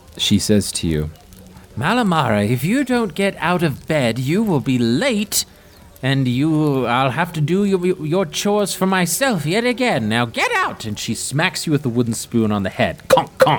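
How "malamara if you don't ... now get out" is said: very high, shrill, nagging granny voice, drawn-out "I'll". Narrator voicing the grandmother waking the player in the tent, grandmother character voice. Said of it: "And you look up into the face of your grandmother, / And you look up into the face of your grandmother, / And you look up into the face of your grandmother, / Get up! Get up! Right now, [name]!".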